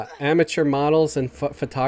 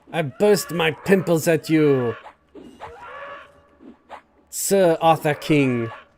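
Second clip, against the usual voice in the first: clumsy, exaggerated, taunting bad French accent. Playing a French painter, taunting Sir Arthur King: bad Monty Python French accent. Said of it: "doing a a bad uh, Monty Python French accent".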